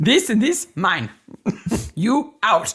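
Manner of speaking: high-pitched, put-on Russian accent. Joking about Olga's parents claiming the whole estate, in a put-on Russian accent. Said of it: "That's my best Russian accent".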